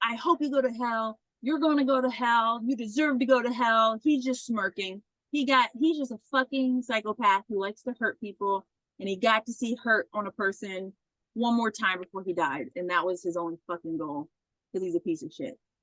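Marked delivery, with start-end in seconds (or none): 0.0-4.0 mock screamed words, kept small and mild. Retelling how a woman screamed at a smirking man, imitating someone screaming. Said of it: "as she's screaming".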